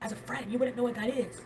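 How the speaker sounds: mock angry voice. Repeating the retold reply when asked again: imitating someone angry. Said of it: "Say it again".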